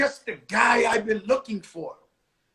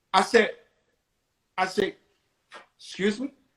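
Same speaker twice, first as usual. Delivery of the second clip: normal talking voice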